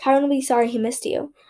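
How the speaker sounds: ordinary delivery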